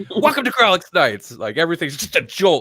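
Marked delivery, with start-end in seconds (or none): 0.1-1.3 high, loud screaming. Showing how the show gets started; screaming. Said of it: "start the show screaming".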